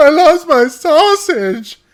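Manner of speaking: put-on, very high, very loud, drawn-out, heartbroken sobbing wail. Retelling own childhood answer to a reverend: retelling a heartbroken scream. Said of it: "I scream heartbroken".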